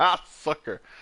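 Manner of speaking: taunting through laughter. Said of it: "then falls over laughing".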